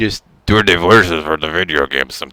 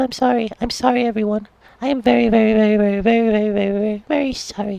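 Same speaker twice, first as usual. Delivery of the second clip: put-on very high-pitched, girlish little child voice. Apologizing to everyone for sounding like this, in a little girl voice. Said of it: "It's a little girl voice".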